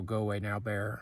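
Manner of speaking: ordinary delivery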